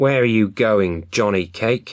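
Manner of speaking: sharp-toned fox voice. Reading a story aloud, voicing the fox: sharp fox voice. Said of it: "The fox called out in a sharp voice".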